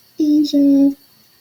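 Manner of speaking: high, cutesy put-on voice.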